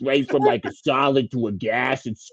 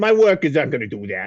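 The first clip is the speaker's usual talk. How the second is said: gruff put-on walrus character voice. Playing a walrus who heads the union, in a gruff walrus voice. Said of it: "It's a better gruff voice than I have".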